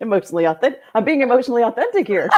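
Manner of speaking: laughing through the words. Apologizing after the other speaker asks why they're laughing: laughing while talking. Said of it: "why are you laughing?".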